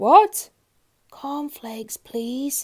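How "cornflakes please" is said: in a whisper. Reading a story aloud: a man repeats his request to the grocer, whispered. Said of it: "he whispered".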